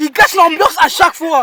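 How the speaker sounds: shouting. In heated banter among several people, shouting. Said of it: "Pourquoi tu cries?".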